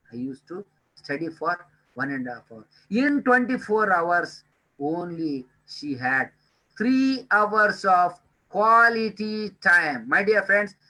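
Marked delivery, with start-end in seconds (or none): 6.8-10.1 "quality time" stressed and stretched out slowly. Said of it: "I am emphasizing the word quality time".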